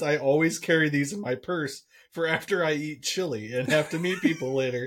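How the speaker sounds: ordinary delivery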